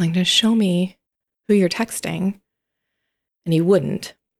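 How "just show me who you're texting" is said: plain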